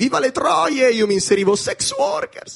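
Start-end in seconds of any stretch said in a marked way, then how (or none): 0.0-0.9 put-on play-acted rowdy drunk shouting, high pitch. Retelling what drunk people yelled in the street: imitating drunken yelling. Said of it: "quando urlavano così tutti ubriachi".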